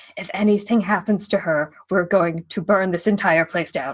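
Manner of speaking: hushed, whispered voice. Leaning in close to two others with a threat: whispering. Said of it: "to whisper to Crawford and Abe".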